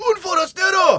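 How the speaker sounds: piercing, shrill, very loud, high villager shout. Asked by another speaker to do the game villagers shouting: Resident Evil 4 villager shout. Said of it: "your impression of the the Resident Evil four villagers when they shout at you".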